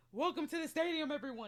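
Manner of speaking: loud, high auction-house auctioneer voice. Reviewing a woman's branding, imitating her auction voice. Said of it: "this auction voice".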